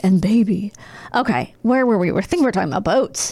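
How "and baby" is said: put-on creepy storyteller voice. Asked by the other speaker to do James Spader: James Spader impression. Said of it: "He's like".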